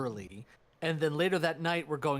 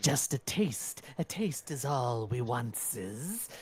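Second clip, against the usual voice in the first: sibilant, hissing creature voice; 2 semitones lower than usual. Voicing one of two skulls talking telepathically, hissing skull voice. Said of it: "these sort of hissing voices".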